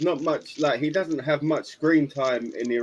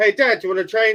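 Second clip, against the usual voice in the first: loud, high-pitched shout. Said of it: "Trunks shouts over to Vegeta".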